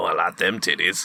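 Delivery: imitated deep voice. Describing a man from a show, mimicking what he says in a deep voice. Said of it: "he's in his deep voice".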